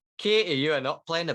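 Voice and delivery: loud, thick Northern English accent drifting toward Scottish. Performing a requested voice line for the group: heavy Northern English accent. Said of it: "I can put the Northern into it".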